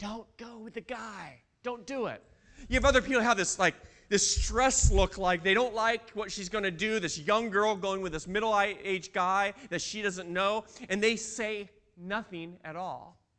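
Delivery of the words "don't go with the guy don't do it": soft, hushed whisper. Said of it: "whisper over to her".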